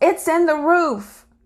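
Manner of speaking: high-pitched yell.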